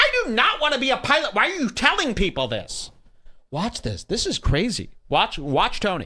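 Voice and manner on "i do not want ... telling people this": very high, sharp, swooping angry snap. Retelling how someone snapped at another performer offstage: imitating Tony snapping angrily. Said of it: "Tony immediately snaps at Red Band".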